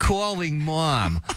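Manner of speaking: put-on New York accent, phone-assistant voice. Imitating the voice in the car that says calling, the speaker uses a new york accent. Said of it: "got like a New York accent".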